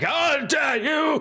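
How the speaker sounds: grand proclaiming outcry, pitched very high. Voicing a character shouting from a distance: proclaiming voice. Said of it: "you hear that proclamating voice be like".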